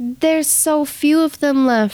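cold, heartless villain voice.

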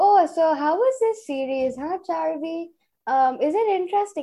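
put-on chuckling. Retelling how dad questioned her about a series, imitating laughing while talking. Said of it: "And he's laughing, mind you".

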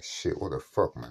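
ordinary delivery

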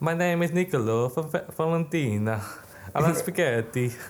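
put-on Eastern European accent. Playing an accent guessing game, reading a card aloud in a Borat-like accent. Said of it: "That sounds so much like Borat".

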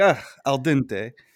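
over-the-top, hammed-up fake Italian cook accent. Retelling a character's line after he splatters a zombie: fake italian accent. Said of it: "not fake Italian lines".

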